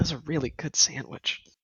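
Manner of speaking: soft, whispered mutter under the breath. Playing a character after their sandwich is thrown away: muttering under breath. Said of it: "I just mutter in my breath".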